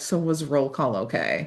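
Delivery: soft, low, quiet, gentle, vulnerable voice. Retelling how he pulls her back and asks her, retelling a soft, quiet question. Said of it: "asks her in this quiet, like soft".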